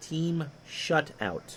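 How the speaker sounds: each word carefully drawn out, slow and deliberate. Talking about a phrase you have to say slow: 'team shutout' said slowly. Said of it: "that's something you have to say slow".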